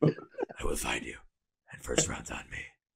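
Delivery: raspy, whispered delivery. Doing the line after being urged to: Liam Neeson raspy voice. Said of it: "the leather jacket and the raspy voice".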